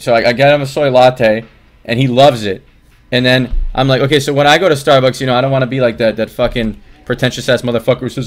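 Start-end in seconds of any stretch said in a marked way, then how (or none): none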